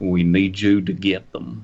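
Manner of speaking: put-on southern-voiced, southern accent. Pitching a story idea, voicing a cloaked alien figure: southern voice. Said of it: "He has a southern voice".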